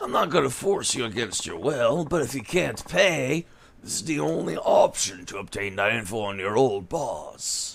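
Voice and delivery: soft, put-on longtime smoker's voice. Voicing a character the way its voice actor does, in a put-on smoker's voice. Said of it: "trying to make him sound like the voice actor does".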